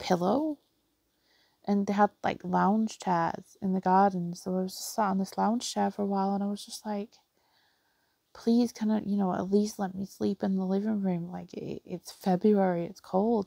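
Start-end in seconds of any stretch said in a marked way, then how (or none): 8.3-13.5 pleading tone. Retelling being kept in the cold garden, imitating own pleading. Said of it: "I must have been pleading with him".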